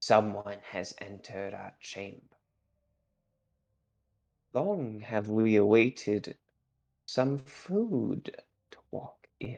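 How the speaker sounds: rasping, hushed whispered voice. Narrating another voice the players suddenly hear, whispering raspy voice. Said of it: "it's like this whispering, raspy voice".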